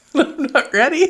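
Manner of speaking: laughing through words. Trying to start another take with a partner, giggling while talking. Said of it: "You got the giggles now".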